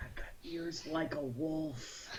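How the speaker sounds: high, hushed whisper, "wolf" drawn out. Creeping forward to Amaranth and speaking only to her, whispering. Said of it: "I whisper to her and I say".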